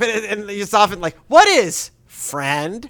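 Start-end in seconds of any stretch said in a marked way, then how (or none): 1.3-2.9 loud, raised cartoon-character voice. Quoting the character's typical question: Forky voice. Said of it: "in the Forky voice".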